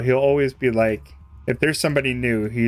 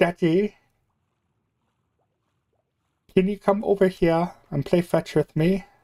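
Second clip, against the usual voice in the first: high, put-on little English boy voice; 6 semitones higher than usual. Speaker imitates a little English boy talking to his daddy, little English boy voice. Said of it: "this little like English boy".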